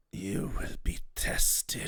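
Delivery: breathy, whispered dragon-like voice. Voicing a voice that speaks to a player in a dream: draconic voice. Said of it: "you hear a draconic voice speak to you".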